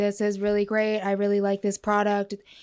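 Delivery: flat, level, one-note monotone delivery. Showing how they do an audition line in monotone: flat monotone. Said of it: "I do the audition like monotone".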